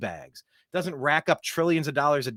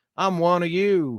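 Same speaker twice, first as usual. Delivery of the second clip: slow, fake, put-on Southern drawl; 2 semitones higher than usual. Mocking politicians on whistle stop tours, imitating a put-on Southern accent. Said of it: "suddenly they got a Southern accent".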